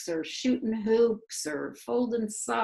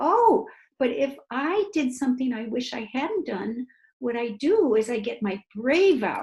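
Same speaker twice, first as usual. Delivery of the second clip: put-on higher-pitched talk as if to a toddler; 2 semitones higher, 4 dB louder than usual. Showing how they explain a lesson to little kids, talking like to a toddler. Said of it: "I'm talking like you're three".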